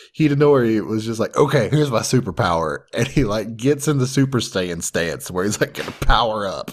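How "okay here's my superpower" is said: usual speaking voice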